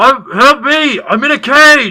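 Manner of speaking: hollering out at full volume, very loud. Trapped in a cage, calling out to someone checking if they're alive, yelling. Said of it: "you're yelling that".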